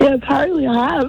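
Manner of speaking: very hoarse husky voice. A caller on the phone who has lost her voice answers the host, very hoarse and husky. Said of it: "there's sounding husky".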